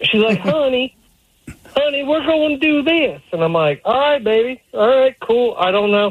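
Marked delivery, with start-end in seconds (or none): 0.4-3.2 put-on Southern accent, pitched up. Quoting the speaker's wife announcing plans, imitating her southern accent. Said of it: "she has a southern accent".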